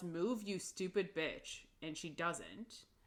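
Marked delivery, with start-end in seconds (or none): none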